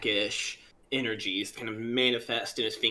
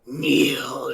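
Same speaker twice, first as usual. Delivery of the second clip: loud, growled single word; 3 semitones higher, 7 dB louder than usual. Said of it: "growls out".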